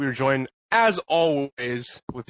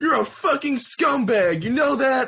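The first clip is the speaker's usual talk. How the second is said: put-on drunk ranting voice, higher; 11 semitones higher than usual. Retelling how a drunk man insulted a stranger: imitating drunk Ben ranting. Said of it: "maybe a little intoxicated".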